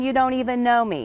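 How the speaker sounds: ordinary talk, nothing marked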